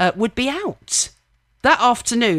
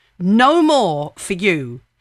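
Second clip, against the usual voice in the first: put-on firm, slowed voice. Recalling a man telling them to stop, retelling a firm command. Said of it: "in a firm voice".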